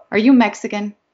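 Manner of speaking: bluntly said. A woman who has been staring at the narrator asks, blunt question. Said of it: "she asks bluntly".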